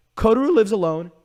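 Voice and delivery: loud voice cracking upward into high pitch. Naming an anime to listeners, voice cracking. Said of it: "My voice cracked".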